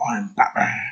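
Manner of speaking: breathy, breathed-out whisper. Retelling how the famous line was delivered: imitating Michael Keaton's Batman line. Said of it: "he did it with that, like".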